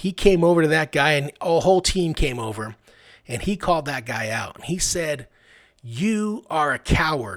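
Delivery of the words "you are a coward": slow, furious, angry delivery. Retelling a coach calling out a player, imitating a mad coach. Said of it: "He was mad".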